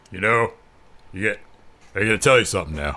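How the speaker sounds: hesitant, halting, stumbling delivery, as if forgetting. Imitating how Damian Priest delivers a promo with hand movements: imitating Damian Priest. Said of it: "he goes".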